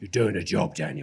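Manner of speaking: kindly yet firm, bossy tone. Retelling how the casting director bossed him about: imitating Mary Selway's bossy voice. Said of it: "Did she talk like that?".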